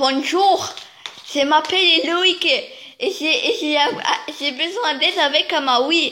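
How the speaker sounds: put-on Alsatian French accent, very slow and deliberate. Quoting a video about needing help with a Wii, in an Alsatian French accent. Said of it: "faites-le avec l'accent alsacien".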